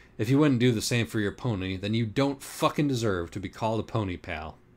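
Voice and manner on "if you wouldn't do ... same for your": plain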